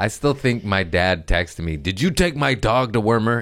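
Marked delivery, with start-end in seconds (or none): 1.8-3.4 play-acted stern, serious, cross, angry tone. Retelling a text their dad sent about the dog, mock serious, angry tone. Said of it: "in a serious, angry tone".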